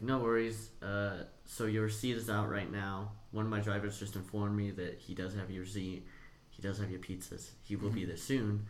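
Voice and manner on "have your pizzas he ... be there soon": ordinary talk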